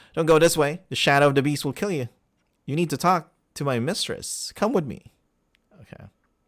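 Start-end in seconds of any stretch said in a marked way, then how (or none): 0.2-5.1 rushed, rapid-fire words tumbling out nonstop. Voicing a character who concentrates hard on his words: rapid-fire words. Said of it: "his rapid fire words".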